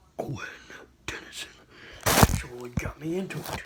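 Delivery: breathy, whispered aside. Admitting which voice got them into a tv show: whispering. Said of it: "I'm gonna whisper this".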